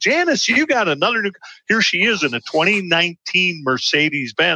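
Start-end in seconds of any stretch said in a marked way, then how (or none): 0.0-1.4 acted-out light, ribbing tease, pitched up. Retelling teasing someone from the same office complex, retelling teasing someone. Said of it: "I'm teasing her".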